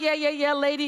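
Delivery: put-on dismissive voice. Retelling how the woman answered her promise: imitating someone dismissive. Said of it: "she was very dismissive".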